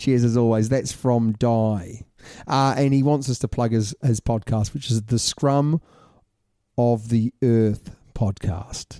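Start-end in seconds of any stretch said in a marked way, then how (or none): 5.0-9.0 beat in the middle of scrum of the earth. Plugging someone's podcast: pause within scrum of the earth. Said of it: "Do you like how I paused there?".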